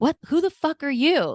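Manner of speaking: play-acted, appalled, shrill yell, very high. Retelling confronting an intruder in the bedroom: imitating own yelling. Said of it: "Like, I yelled at him".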